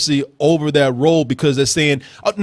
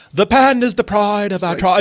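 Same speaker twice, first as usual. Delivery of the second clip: imitated put-on British accent; 3 semitones higher than usual. Imitating a movie character's line: imitating a british accent. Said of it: "she's talking with a British accent".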